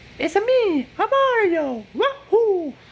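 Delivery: very high, loud, cartoonish Italian-accented impression.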